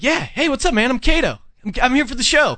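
high-pitched, super high-energy delivery. Retelling a celebrity walking up and greeting: imitating Kato Kaelin, high energy. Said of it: "really high energy".

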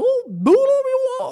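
very high, squeaky voice. Imagining a cartoon looking into the camera, the speaker does a Mickey Mouse impression. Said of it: "That was my first ever Mickey impression".

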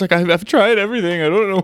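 put-on near-tears voice. A sports host retells a player's emotional soundbite, imitating Gerrit Cole's shaking voice. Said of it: "the way his voice is shaking".

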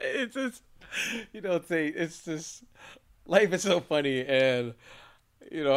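helpless, uncontrollable laughter while talking. A podcast host talking on the show, can't stop laughing. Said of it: "I can't stop laughing tonight".

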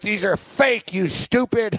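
indignant, irate, high, drawn-out angry delivery. Retelling a manager attacking an employee: imitating a manager yelling. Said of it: "yelling at".

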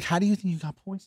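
soft, hushed, voiceless half-whisper. Retelling what she asked him while he couldn't breathe, imitating her half-whisper. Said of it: "She's whispering".

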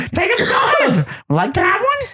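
very high, squeaky, stupid-sounding voice. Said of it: "My stupid voice".

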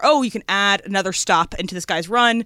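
normal talking voice

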